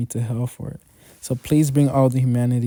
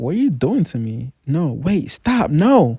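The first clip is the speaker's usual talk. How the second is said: panicked, frantic, fearful pleading shouts; 3 semitones higher, 3 dB louder than usual. A character waking from a dream cries out, yelling. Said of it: "Sorry for yelling".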